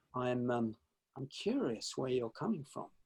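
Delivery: very quiet, soft, gentle tone. Showing how to answer when the other person gets aggressive: said quietly. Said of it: "just to say quietly".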